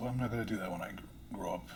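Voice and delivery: ordinary talk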